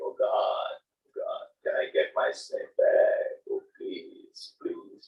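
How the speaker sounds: mock very slow, whispery, breathy, tearful begging tone. Retelling a story of a snake charmer praying for his snake: imitating a crying plea to God. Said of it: "he's crying, crying and everything".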